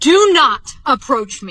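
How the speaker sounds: mock hollering, loud and forceful. Recounting a man approaching from thirty feet away, retelling a yell. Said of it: "I literally yelled at him and I said".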